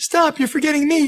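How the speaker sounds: put-on small, sad little voice. Retelling hearing a voice from the car roof: imitating a sad little voice. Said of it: "heard this sad little voice say".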